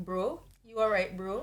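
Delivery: slow Canadian accent. Imitating Canadian slang: Canadian accent. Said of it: "That's such a good Canadian accent".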